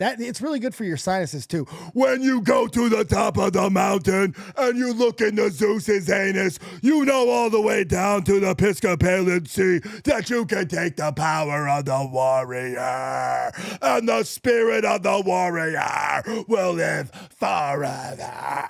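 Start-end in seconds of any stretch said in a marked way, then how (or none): 1.9-18.7 loud, slow ranting delivery. Showing how easy an impression is: Ultimate Warrior rant. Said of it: "just rant really loud".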